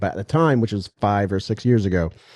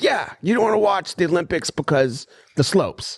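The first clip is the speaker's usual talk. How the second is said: put-on high-pitched, drunken dad voice; 8 semitones higher than usual. Retelling an argument, quoting his dad while imitating a drunk man. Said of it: "He was drunk as fuck".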